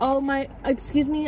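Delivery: slow, sweet, nice, courteous tone. Recounting finding items missing from a food order, retelling a nice request. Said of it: "I said it so nicely".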